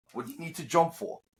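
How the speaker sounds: high and irritated. Retelling what Taz said on air: imitating Taz. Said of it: "you could hear real Taz came out".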